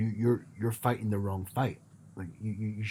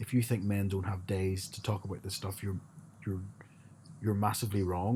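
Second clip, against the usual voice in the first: usual speaking voice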